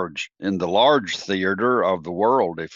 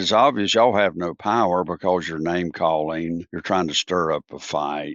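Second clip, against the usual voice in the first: ordinary delivery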